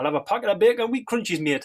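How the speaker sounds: loud, high, put-on Geordie accent. Retelling ordering at the sixth-form tuck shop, doing a geordie accent. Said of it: "we used to do like a Geordie accent".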